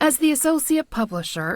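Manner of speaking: ordinary delivery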